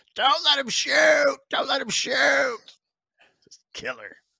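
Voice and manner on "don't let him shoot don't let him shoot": put-on shrill yelling dad voice, very high. Recalling having a slap shot at thirteen, retelling one dad yelling. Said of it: "one dad yelling".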